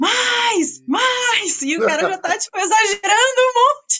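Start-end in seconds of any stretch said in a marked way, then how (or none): 0.0-1.6 high, urging shout with each "mais" drawn out. Describing a film scene, the speaker acts out Glauber shouting at an actor. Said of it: "o Glauber tá lá gritando".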